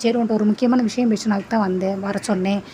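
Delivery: ordinary delivery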